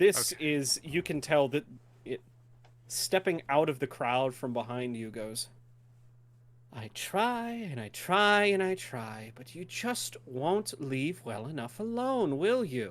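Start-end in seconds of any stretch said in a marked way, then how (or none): 6.7-12.9 slow, drawn-out succubus voice. Stepping out of the crowd behind the group, the succubus confronts them; Malathia's succubus voice. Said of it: "a, a succubus, / a, a succubus, more or less. She's moderately clothed, / She turns".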